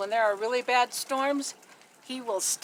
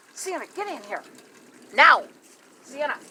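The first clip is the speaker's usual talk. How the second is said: loud, urgent yell; 3 semitones higher, 5 dB louder than usual. Filming jets in the sky, a man calls sienna to get in here: urgent yell. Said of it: "I didn't mean to yell like that".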